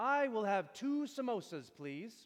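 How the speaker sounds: put-on smug, proud voice. Retelling what a buddy said at the front of the line, mock-smug and proud. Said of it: "very smugly, very proudly".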